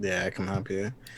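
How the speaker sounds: quiet mumble under breath. Answering a droid that asks for help: mumbled under breath. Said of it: "Just mumbling under my breath".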